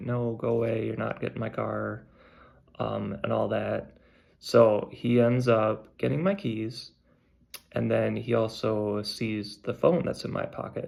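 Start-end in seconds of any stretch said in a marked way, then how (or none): none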